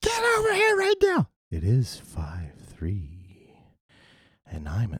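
put-on radio announcer voice. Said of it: "She's like".

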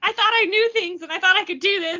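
high, pissed-off, fed-up frustrated outburst. Speaker acts out a man failing to open a door, imitating someone pissed off. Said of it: "he's like getting real pissed off about it".

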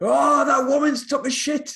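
shrill, very high-pitched, loud shrieking scream. Retelling a man who smelled something on the way to the toilet, retelling a scream. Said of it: "And he screamed".

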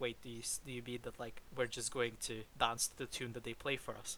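ordinary talk, nothing marked

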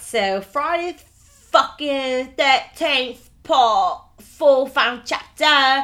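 put-on Cockney accent. Introducing the next film part to the group, in a cockney accent. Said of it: "I don't know where your Cockney accent came from".

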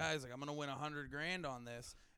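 ordinary delivery

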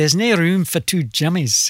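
exaggerated put-on Scottish accent. Retelling what the older jim said in the band: put-on scottish accent. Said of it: "Australians attempting to do a Scottish accent".

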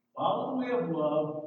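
ordinary talk

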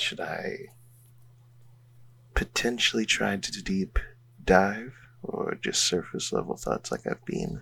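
whispered voice. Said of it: "I'm whispering to Alandi right now".

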